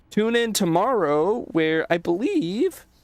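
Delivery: words pushed out with effort. Signing off to viewers while standing up to stretch, talking while stretching. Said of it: "sorry for my voice there".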